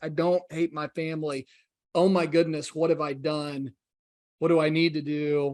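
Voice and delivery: acted tearful, distressed voice. Recounting being confronted about travel and family, retelling being in tears. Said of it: "I'm in tears. I'm broken".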